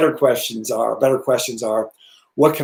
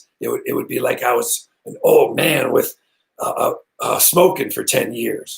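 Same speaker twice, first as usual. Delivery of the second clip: put-on hoarse voice like an old smoker. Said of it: "I would speak like this".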